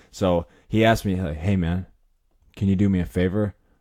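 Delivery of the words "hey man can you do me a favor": put-on discreet, secretive voice. Retelling a stranger's sudden request to the speaker: imitating someone being discreet. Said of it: "he's being real discreet".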